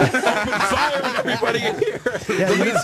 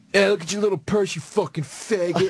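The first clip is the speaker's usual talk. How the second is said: put-on drunk man voice, lower pitch; 4 semitones lower than usual. Retelling a passing insult after a show: imitating a drunk guy. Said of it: "Some drunk guy goes".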